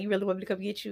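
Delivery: amused voice broken by laughter. Retelling what a guy laughing with his friends said, imitating him laughing while talking. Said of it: "He was laughing and he was like".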